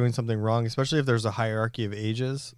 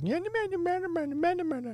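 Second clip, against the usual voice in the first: put-on very high, slow, drawn-out small kid's voice; 3 dB quieter than usual. Retelling a sound heard from the kitchen: imitating a little boy's voice. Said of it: "little boy voice just in the background".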